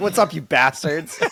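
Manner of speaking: mock, overdone aggressive delivery. Quoting the other speaker's failed opening greeting back to them, mock-aggressive greeting. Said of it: "I said it with too much aggression".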